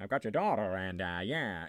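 deliberately awful, way-off put-on tough voice. Retelling a scene where a kidnapper calls the parents: bad Jimmy Cagney impression. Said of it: "a John Wolter level impression of Jimmy Cagney".

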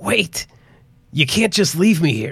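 hoarse, raspy, high voice crying out. A boy gripping Henry's pant leg cries out to him, raspy cry. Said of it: "The raspy voice cried out".

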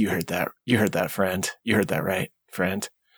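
half-whispered, kind of whispering. Speaking in character to another character while in a rage: kind of whispering. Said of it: "kinda whisper".

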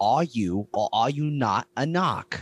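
put-on Boston accent, "narc" said as "knock". Quoting a brother's line from a movie scene: boston accent. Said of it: "get into the Boston accent".

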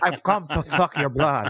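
talking as if wearing a prosthetic. Showing how Barlow would sound with the prosthetic: Barlow voice through the prosthetic. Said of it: "sounding like this with the prosthetic thing".

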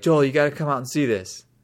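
loud, called-out voice. Retelling how a housemate called from outside: imitating JC yelling. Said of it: "But he yells".

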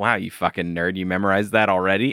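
imitated condescending tone. Recasting an actor's line from the show, imitating a condescending tone. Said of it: "intended for it to sound like".

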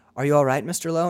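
ordinary delivery

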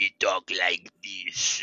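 put-on gravelly raspy voice. Imitating a character from a French series: gravelly raspy Boubacar voice. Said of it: "such a gravelly, raspy voice".

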